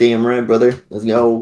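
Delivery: put-on Southern American accent. Retelling what they said back then, in a put-on southern accent. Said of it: "Southern accent. I was like".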